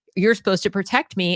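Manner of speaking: plain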